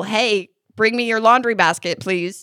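calling out loudly. From the laundry room, a parent calls to her daughter to bring her basket, yelling. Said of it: "I could just yell".

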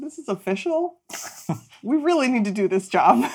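play-acted voice catching, all choked up. Retelling what a character said when she got choked up: imitating someone choked up. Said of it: "she starts getting very choked up".

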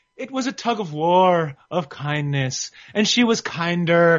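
slow, drawn-out, lilting sing-song. Retelling how a boxer started talking abroad: sing-song Keith Thurman voice. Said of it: "He's kind of getting this sing-song carries like".

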